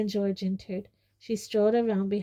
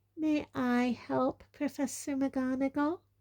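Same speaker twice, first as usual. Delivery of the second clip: high, sickly-sweet, syrupy, poisonously polite voice; 5 semitones higher, 3 dB quieter than usual. Reading a novel aloud, voicing Professor Umbridge addressing another professor: poisonously sweet voice. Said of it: "in her most poisonously sweet voice".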